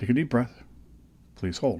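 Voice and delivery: put-on British accent, machine-like voice. Speaker retells what the CT machine told them, imitating a British-accented machine. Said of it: "this is a British accent coming out".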